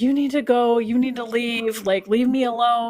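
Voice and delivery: acted, mild, reined-in half-yell. Retelling ordering a sobbing woman in the corner to leave: retelling own yelling. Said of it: "I'm yelling at her".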